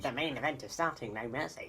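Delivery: teasing, mocking put-on voice. Repeating the other speaker's impression back: imitating a friend imitating him. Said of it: "you don't have to do an impression of me doing an impression of you".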